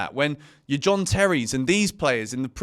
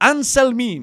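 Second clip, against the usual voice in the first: loud, high, awful fake Italian accent; 9 semitones higher, 6 dB louder than usual. Reading out a transfer rumour about a Boca Juniors centre-back, in an awful Italian accent. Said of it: "to do like a an awful Ita- Italian accent there".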